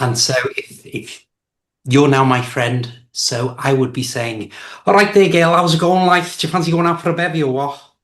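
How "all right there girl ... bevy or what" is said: casual, quick Liverpool Scouse accent. Showing how they would greet a friend, in their scouse accent. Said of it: "switch into my Scouse accent".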